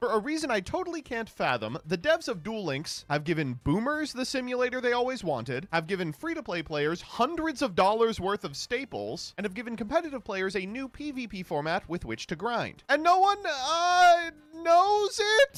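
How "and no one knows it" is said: annoying, very high cartoon voice, stretched-out "uh". Revealing that no one knows about the feature: annoying Rick and Morty voice. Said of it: "the annoying, um, like, Rick and Morty voice".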